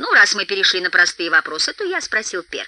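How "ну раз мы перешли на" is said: ordinary delivery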